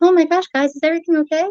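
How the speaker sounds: fake, high, sweet, squeaky-clean put-on voice. Showing the sweet, clean voice that could be put on: put-on sweet clean voice. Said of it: "I'm not trying to talk real sweet and clean. Like, I could do that".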